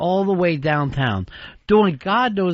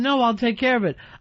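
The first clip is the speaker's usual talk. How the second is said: put-on scream, higher pitch; 6 semitones higher than usual. Retelling how a coworker reacted when caught in a lie: imitating someone screaming. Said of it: "and he's screaming".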